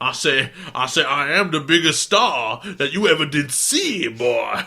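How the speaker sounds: loud, booming cartoon voice. Joking along about the officer's voice: Foghorn Leghorn voice. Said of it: "Foghorn Edamon".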